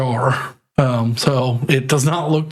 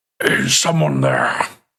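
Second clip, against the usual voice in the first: raspy, rough, guttural voice from the back of the throat. Game master voicing someone behind a door the player just opened: guttural, throaty voice. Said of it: "in a very sort of guttural, throaty voice".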